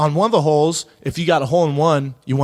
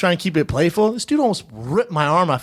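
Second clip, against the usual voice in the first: ordinary talk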